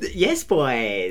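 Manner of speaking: camp, posh, low-pitched delivery. Imitating how a tag team says it, in a camp, posh voice. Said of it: "They say it like all camp and posh".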